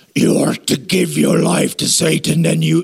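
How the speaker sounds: rough, creaky, raspy devil voice. Speaker imagines how Satan would talk if he showed up, Satan voice. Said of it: "he would talk like this".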